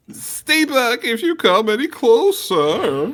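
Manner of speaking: panicked adult man voice. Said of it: "It was more normal than that".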